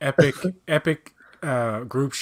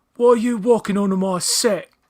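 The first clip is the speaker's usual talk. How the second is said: put-on angry British accent, higher and louder; 9 semitones higher, 6 dB louder than usual.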